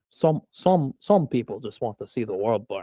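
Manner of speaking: awful put-on voice, very low, committed to badly. Asked to do a Michael Caine, the speaker attempts a Michael Caine impression. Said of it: "can you do a Michael Caine? ... That was an awful Michael".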